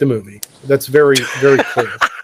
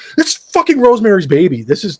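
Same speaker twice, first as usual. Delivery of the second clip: furious, fed-up, livid outburst, higher pitch; 6 semitones higher than usual. Retelling a reply to the fiance while watching the film: retelling own angry reply.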